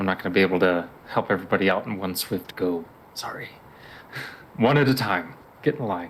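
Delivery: hushed, whispered voice. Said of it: "I'm whispering this now".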